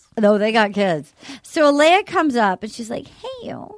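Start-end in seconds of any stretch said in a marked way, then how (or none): 3.1-3.8 crystal-like voice. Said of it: "She does do the crystal voice".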